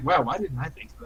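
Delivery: soft, quiet mutter under the breath. Saying a character's reaction line to the others: quietly under breath. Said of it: "quietly, under my breath".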